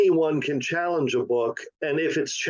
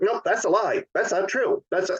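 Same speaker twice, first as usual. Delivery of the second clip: high, stupid-sounding, small pitched-up voice; 4 semitones higher than usual. Imitating Ron DeSantis brushing off criticism: stupid little Ron DeSantis voice. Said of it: "in his stupid little voice says".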